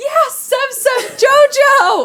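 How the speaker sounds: yelled cheer, high, slow, drawn out. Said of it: "so that we yell".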